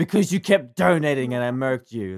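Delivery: put-on angry voice. Retelling an angry reply to a donation: imitating Scribbler's angry reply. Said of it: "Scribbler responds so angrily".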